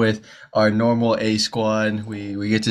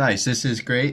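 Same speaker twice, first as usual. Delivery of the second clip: put-on sarcastic tone; 3 semitones higher than usual. Retelling a first reaction to the team roster: imitating own sarcastic remark. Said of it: "I'm being sarcastic, by the way".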